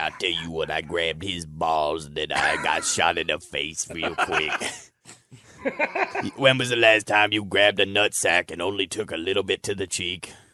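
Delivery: put-on, fake Southern tracheotomy voice. Joining friends talking about a shooting scene, in a southern tracheotomy voice. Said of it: "you did Southern tracheotomy voice".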